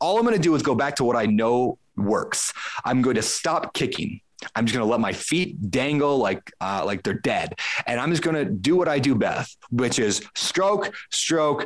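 ordinary talk

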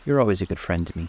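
ordinary delivery

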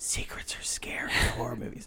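breathy, hushed, eerie horror-movie whisper. Retelling a horror movie scene where a man warns his friend: imitating a whisper. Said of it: "he tells his friend in a whisper".

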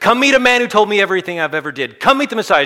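very high, shrill, loud yell at the top of the voice. Retelling how the woman ran into town calling people: imitating someone yelling at top of voice. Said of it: "yelling at the top of her voice".

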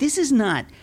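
high, worked-up, fired-up passion.

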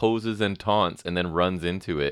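ordinary delivery

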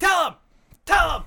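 mock very high, loud shouted yell. Retelling a backstage scene where Jericho yells at someone: imitating Jericho yelling. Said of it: "Jericho's just yelling".

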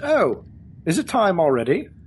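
confused, swooping character voice. Narrating a game, voice a creature looking at the players, confused. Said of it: "looks at all of you very confused and says".

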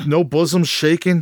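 normal talking voice

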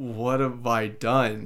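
slow, sorrowful, disappointed voice. Quoting a show's character realizing what he's doing: imitating Dracula's sorrowful voice. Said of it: "the sorrow in his voice of".

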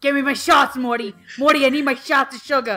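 belted out loudly, badly done. Joking about diabetes in a bad Rick impression. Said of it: "the worst Rick and Morty impression".

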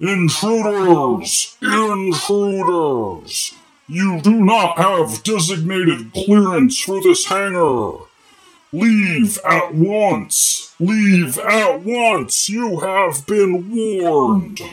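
booming robot shouting. Voicing a large rusty security robot shouting a warning at intruders. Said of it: "as this thing is shouting this warning".

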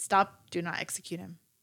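ordinary talk

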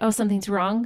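plain

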